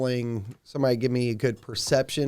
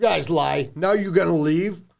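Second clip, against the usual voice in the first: high, loud, accusing orc chief voice. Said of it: "The chief's getting a little annoyed".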